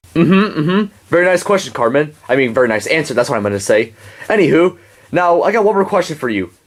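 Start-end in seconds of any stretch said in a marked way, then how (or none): none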